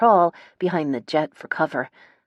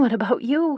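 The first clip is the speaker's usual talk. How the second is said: high, shaky, trembling, frightened voice; 8 semitones higher than usual. Reading a tense gunfight scene aloud: voice shaking with fear. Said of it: "My voice shakes with fear".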